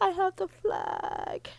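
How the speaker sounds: high, slow, tearful crying. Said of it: "I start crying".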